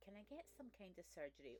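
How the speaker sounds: normal talking voice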